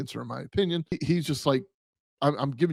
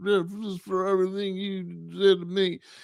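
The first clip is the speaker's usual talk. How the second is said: put-on drunk yelling, slower; 6 semitones higher than usual. Retelling a recording of a woman yelling at a man: imitating drunk yelling. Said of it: "she sounds drunk".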